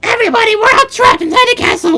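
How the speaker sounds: very high, swooping, sing-song little creature voice. Player reading a game character's dialogue aloud, in a Toad voice. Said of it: "my toad voice is off".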